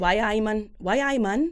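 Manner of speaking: slow, drawn-out, put-on Newcastle Geordie accent. Trying out accents when prompted: Geordie accent.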